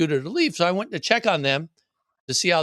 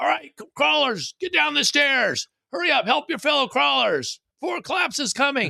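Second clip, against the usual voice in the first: rough, high-pitched holler; 10 semitones higher than usual. Retelling hollering at a line of people while in cosplay: hollering in Carl voice. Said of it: "using my best Carl voice to holler".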